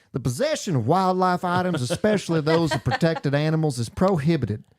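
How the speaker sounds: put-on Louisiana accent. Quoting the way the guy said it, imitating a louisiana accent. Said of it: "it's Detroit, not Louisiana".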